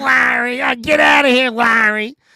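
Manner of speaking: acted, scornful, disdainful, very high pitch. Mimicking how Susie says Larry's name, imitating Susie's disdain. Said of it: "says Larry's name with such disdain".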